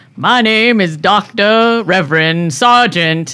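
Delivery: very booming voice, slow and loud.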